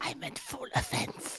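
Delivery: hushed whisper under the breath. After an apology for whispering, a character adds an aside, whispering.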